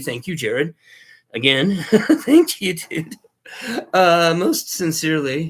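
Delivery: enthusiastic voice cracking. Thanking jared and the channel's community, voice crackling and breaking. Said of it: "as my voice crackles and breaks".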